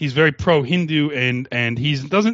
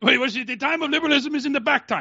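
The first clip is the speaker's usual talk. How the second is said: put-on Indian accent with very high pitch; 10 semitones higher than usual. Puzzling over a phrase with others, slipping into an Indian accent. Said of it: "Now I can't stop doing Indian voice".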